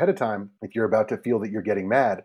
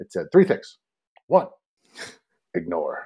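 low pitch with big, swooping intonation; 4 semitones lower than usual. Speaker quotes a newspaper article's advice to a co-speaker, New York Times voice. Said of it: "I like your New York Times voice".

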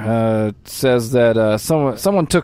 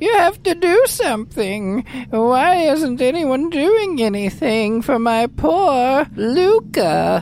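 put-on very high-pitched elderly woman's voice; 11 semitones higher than usual. Narrator describing a scene voices a woman speaking with a steward, old woman voice. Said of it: "you hear the voice of an old woman".

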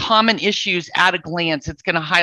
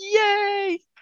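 high, small mock cheer of relief. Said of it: "You're like".

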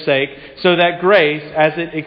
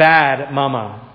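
put-on sobbing toddler voice, lower; 4 semitones lower than usual. Retelling a toddler crying after a jalapeno, imitating a sobbing toddler. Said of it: "declares through a tear-soaked 3.5-year-old voice".

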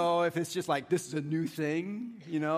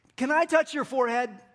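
carrying, lobby-filling eager tone; 8 semitones higher, 5 dB louder than usual. Recounting someone who ran up to the speaker in a lobby, retelling a loud question. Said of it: "in a nice loud voice so that everyone in the lobby could have heard this".

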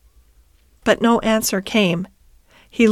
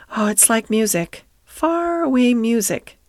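ordinary delivery

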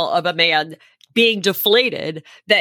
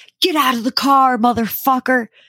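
man yelling, pitched up; 5 semitones higher, 3 dB louder than usual. Retelling a road-rage driver getting out of his car: imitating a man yelling. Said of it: "he's yelling".

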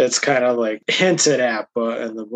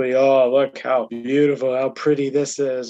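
put-on sarcastic tone. Recounting a scene, acting out a character's sarcastic remark with retold sarcastic praise.

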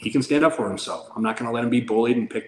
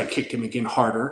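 usual speaking voice

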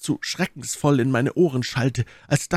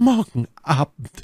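stammering, stuttering over the words; 3 semitones higher than usual. The first-person narrator repeats a reply, stammering. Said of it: "stammelte ich".

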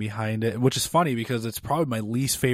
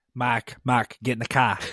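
put-on New York or Boston accent. Playing out a scene with another speaker in a New York or Boston accent. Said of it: "You just sounded like you're from New York or Boston".

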